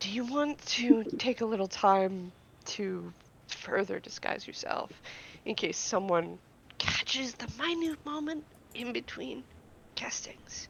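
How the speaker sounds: very soft hushed voice. As Gil, stepping closer to Marcel to speak to him, in a lowered voice. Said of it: "lower his voice".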